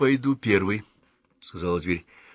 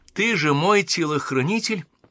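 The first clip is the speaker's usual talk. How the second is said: high, sudden, abrupt crying out; 7 semitones higher, 4 dB louder than usual. Speaking to the huntress who guards her, a character cries out: exclaiming. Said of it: "воскликнула дверь".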